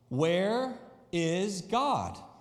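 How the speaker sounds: stricter, even sterner tone. Reading a story aloud, a clergyman repeating a question: even sterner tone. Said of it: "repeated the question in an even sterner tone".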